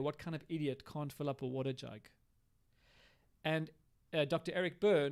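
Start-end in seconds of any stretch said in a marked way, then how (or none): none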